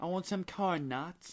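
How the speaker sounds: high, put-on British accent. Two people trying out accents on the same silly line: British accent. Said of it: "We're going British".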